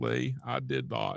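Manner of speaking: very slow, deliberate, every word drawn out. Offering a co-host an impression of Bill Clinton denying something. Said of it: "I do a great Bill Clinton impression".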